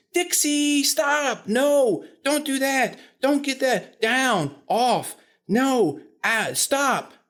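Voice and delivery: very high-pitched, excited voice. Speaker imitating puppy owners scolding their excited puppy, high-pitched owner voice. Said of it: "the owners are having this high-pitched voice".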